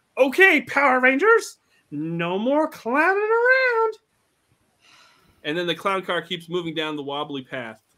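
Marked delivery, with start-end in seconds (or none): 0.2-4.0 very high, shrill, loud, swooping, drawn-out villain shout. Narrating a story as Pineapple steps out of the clown car, Pineapple shouting. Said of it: "he shouts".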